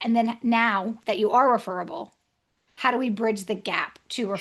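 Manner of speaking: ordinary talk, nothing marked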